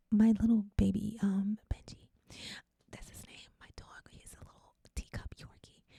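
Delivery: hushed whisper. Recording an episode, speaker doesn't want their dog to hear them, whispering. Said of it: "I'm whispering because".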